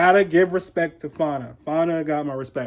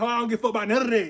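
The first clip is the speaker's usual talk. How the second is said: offhand, dismissive, brushing-aside tone; 6 semitones higher than usual. Recounting a show episode, speaker repeats Kay Regan's line before a fight, imitating Kay Regan. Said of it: "just the way she said it".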